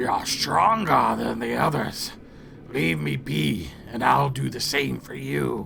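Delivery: deep, gravelly, sonorous voice, broken speech. A voice from the well speaks in broken Common: deep, gravelly, sonorous voice. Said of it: "a deep, gravelly, sonorous voice from the well in broken common".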